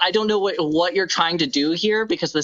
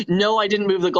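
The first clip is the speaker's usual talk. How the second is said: usual speaking voice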